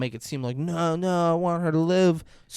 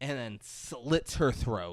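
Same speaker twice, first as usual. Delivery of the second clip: ordinary talk, nothing marked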